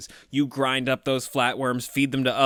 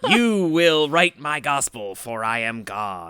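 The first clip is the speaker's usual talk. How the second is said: put-on monster voice, louder; 5 dB louder than usual. Retelling a movie monster's line in a monster voice. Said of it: "I need a monster voice like".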